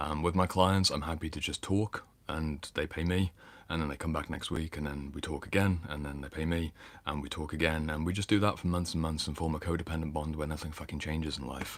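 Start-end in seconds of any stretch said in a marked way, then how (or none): none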